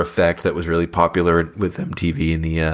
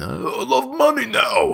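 put-on New York accent, very high, very slow. Playing a character heading to new york, in a put-on new york accent. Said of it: "Maybe I'll affect the New York accent".

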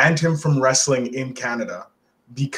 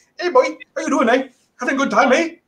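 chummy, friendly put-on Canadian accent, very high; 12 semitones higher than usual. Describing Canadian officers greeting travelers coming back into Canada, imitating friendly Canadian accent. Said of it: "you're coming back into Canada, they're like".

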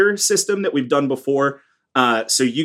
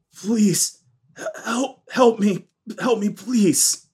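weak, faint croak, much higher, slower; 6 semitones higher than usual. The narrator voices someone scratching at the door, a faint croaking voice. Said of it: "very faintly croak out".

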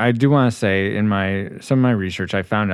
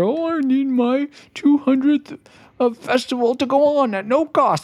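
pitched-up, whiny cartoon mayor voice; 11 semitones higher than usual. Venting about Gotham's mayor, mocking his demands in a Powerpuff Girls mayor voice. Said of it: "you sound like the mayor of Powerpuff Girls".

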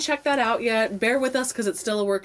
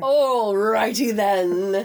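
louder put-on British-sounding accent; 3 dB louder than usual. Asked about his week, the speaker answers in an Ace Ventura impression, sounding British. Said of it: "You always sound so British when you do that".

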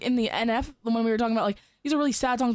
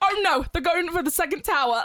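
high, laid-on, put-on Australian accent; 6 semitones higher than usual. Imagining an australian in a 9/11 situation, in a put-on australian accent. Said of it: "can't take an Australian person serious".

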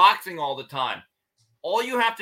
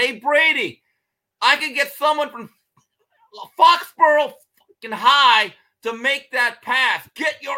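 furious scream, loud and high; 7 semitones higher, 6 dB louder than usual. Recounting a practice drill, the speaker retells a scream over a bad pass. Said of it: "Belichick just screams out".

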